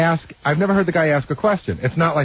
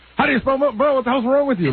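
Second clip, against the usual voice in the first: acted, shrill, very high yelling; 10 semitones higher than usual. Retelling a caller who yelled at an intern: imitating Milton Berle yelling. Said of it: "he starts yelling at her".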